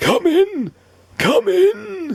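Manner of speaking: put-on slow wheezing, pitched very high. Reading a story, the doctor calls a knocking visitor inside: Doctor Plump wheezing. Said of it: "he wheezed".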